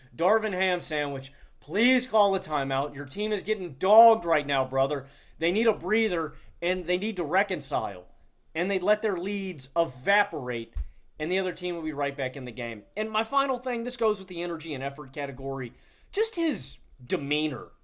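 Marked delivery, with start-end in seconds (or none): none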